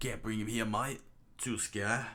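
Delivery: put-on Australian accent. Reading a character's line aloud, trying out an australian accent. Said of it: "let me try the Aussie voice here".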